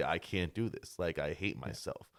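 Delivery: normal talking voice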